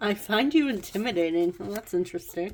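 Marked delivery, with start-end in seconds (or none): none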